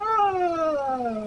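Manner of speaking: frightened high-pitched yelling.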